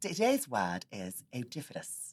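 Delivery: very slow, lilting, deliberate, swooping sing-song. Imitating a presenter who announces a word of the day: imitating Mark's way of talking. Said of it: "his name's Mark and he talks like this".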